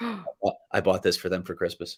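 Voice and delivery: soft, secretive, hushed whisper. Telling a co-host a Christmas gift secret, children nearby: whispering. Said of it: "I have to whisper this because my daughters are nearby".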